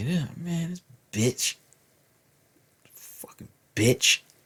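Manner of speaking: mumbled under the breath. Retelling what was said about a teacher in the hallway: imitating mumbling under breath. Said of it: "we used to mumble under our breath".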